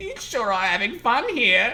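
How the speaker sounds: crazy put-on voice. Voicing the storekeeper in a read-aloud game scene: crazy voice for the storekeeper. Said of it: "like, crazy".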